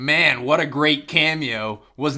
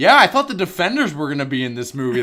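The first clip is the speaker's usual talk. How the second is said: dripping sarcasm, swooping sing-song tone. Retelling joking with her after the movie: retelling a sarcastic remark. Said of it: "really sarcastically started going".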